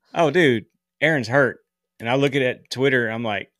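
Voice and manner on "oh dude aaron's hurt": ordinary talk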